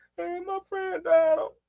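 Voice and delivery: put-on high, tearful, sobbing little child's voice. Retelling a daughter's words about a friend's death: imitating a crying child. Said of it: "she just crying like a mother".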